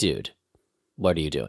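low, dropped voice with a scolding tone.

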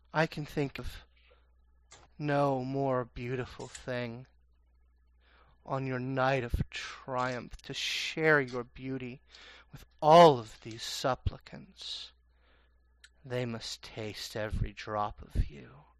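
otherworldly voice. Voicing a presence speaking through Victoria's mouth: unearthly voice. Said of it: "You hear an unearthly voice coming out of her mouth".

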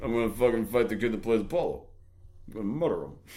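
put-on slurring voice. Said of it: "always be fucking slurring".

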